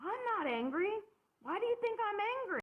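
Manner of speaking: put-on, very high-pitched, shrill, furious shout. Retelling what an agitated support group member yelled: imitating someone yelling. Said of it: "And he yells".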